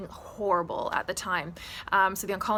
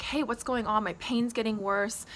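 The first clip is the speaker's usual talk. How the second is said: plain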